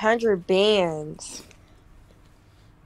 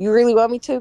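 ordinary talk, nothing marked

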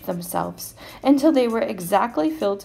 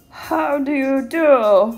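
loud, polite growl with do drawn out; 3 semitones higher, 6 dB louder than usual. A narrator reads the troll Calypso Joe greeting everyone, Calypso Joe's polite growl. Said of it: "He growled politely".

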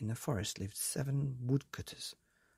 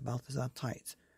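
plain

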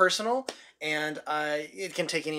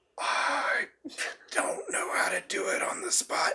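high-pitched, unvoiced whisper with laughter. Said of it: "We need a line in the Batman whisper".

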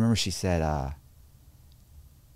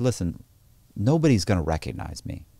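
ordinary delivery

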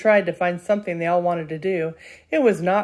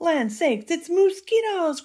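very high, alarmed wailing; 10 semitones higher than usual. Narrator reading the Mississippi aunties' cry in a story, wailing with alarm. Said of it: "cried the Mississippi aunties, wailing with alarm".

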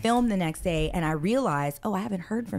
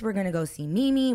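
bursting with excitement. Retelling a line said to grandma: imitating excited speech. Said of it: "Cameron excitedly said".

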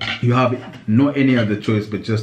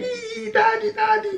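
put-on very high, tearful crying little boy voice. Acting out a boy running back to his father: imitating a crying boy. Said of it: "runs back to you and starts crying like".

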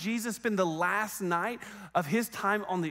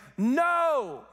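mock exasperated loud yell, "no" drawn out long; 7 semitones higher, 5 dB louder than usual. Retelling a fisherman answering a stranger on the shore: frustrated shout of no. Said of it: "out of frustration".

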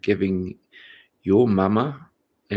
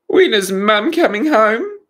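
very high, loud squealing; 14 semitones higher, 7 dB louder than usual. Narrator reads the boys asking after another horrible meal, squealing. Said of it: "the boys squealed".

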